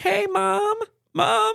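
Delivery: very high-pitched, squeaky voice. Retelling a video where a son hides and calls his mom: imitating a high-pitched voice. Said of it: "he was doing it in a high-pitched voice".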